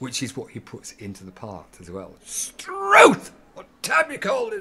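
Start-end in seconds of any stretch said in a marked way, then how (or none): 2.2-4.6 very high, very loud, shrill voice. Retell how he impersonated the landlady during a ten-minute walk into town, as a landlady impression. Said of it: "doing an impersonation of the landlady".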